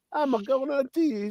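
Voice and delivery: bad Italian accent, very high and soft. Speaker mocks an actor's film accent, doing Russell Crowe's bad Italian accent. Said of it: "It was a bad Italian accent".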